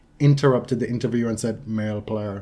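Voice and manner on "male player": flat, quieter monotone delivery. Retelling Andy Murray interrupting an interviewer: Andy Murray monotone. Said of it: "in his very monotone way".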